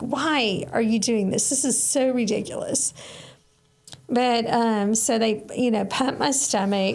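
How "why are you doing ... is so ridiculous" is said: put-on angry scolding voice. Retelling the mom's reaction to the overdose: imitating her mom's angry scolding. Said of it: "She was so mad at me, like".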